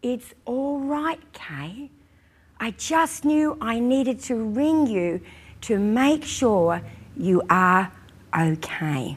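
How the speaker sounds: tender, soft, gentle, kindly reassuring voice. Retelling how a woman who phoned to check on Kay answered, imitating a gentle, kind voice. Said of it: "she said in the most gentle, kind voice".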